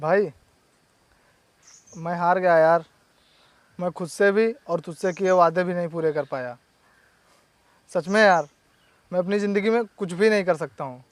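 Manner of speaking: speaking through tears, crying. A brother admits failure to his brother, crying while talking. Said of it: "तू रो क्यों रहा है?".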